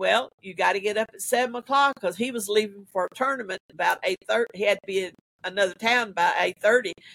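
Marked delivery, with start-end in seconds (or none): none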